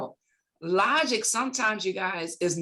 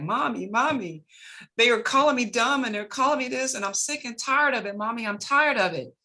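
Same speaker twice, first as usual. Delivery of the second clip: play-acted, tearful, pleading crying little boy voice; 4 semitones higher than usual. Retelling a boy crying to his mom: imitating young Les Brown crying. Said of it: "he was crying to his mom".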